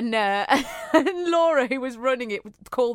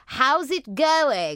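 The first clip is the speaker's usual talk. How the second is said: upper-class posh lady voice. Retelling meeting a woman in the kitchen while making tea: imitating a posh woman. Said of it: "she was really posh".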